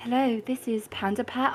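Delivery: soft, whispery, bad fake British accent. Reenacting what he once said while doing A S M R, rubbish British accent. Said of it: "rubbish British accent, A S M R".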